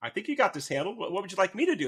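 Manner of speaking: fast, amused, teasing voice through laughter. Retelling how the listener's husband answered his plea for help mid-fight, imitating someone laughing while talking. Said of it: "And he's like laughing".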